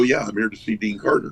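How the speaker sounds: ordinary talk, nothing marked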